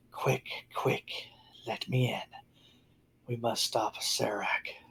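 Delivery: soft, hushed female whisper. A game master voicing a spectral rabbit to a player, in a whispering female voice. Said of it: "A female voice whispers".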